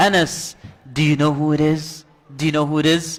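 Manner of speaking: playful, joking disguised voice, very deep. Retelling how he playfully covered Anas's eyes from behind: imitating a deep voice. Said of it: "he says to Anas in a deep voice".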